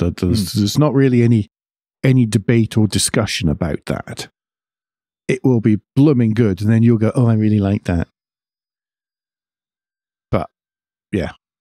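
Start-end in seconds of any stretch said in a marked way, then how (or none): 7.1-8.1 mocking, demeaning put-on voice. Imagining a listener's reaction to a car, in a put-on demeaning voice. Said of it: "That was my demeaning voice".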